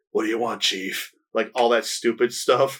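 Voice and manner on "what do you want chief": cliché action hero gruffness. Describing a short film, the speaker mimics its main character in a Kung Fury gruff guy voice. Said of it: "speaks with that stereotypical gruff guy voice".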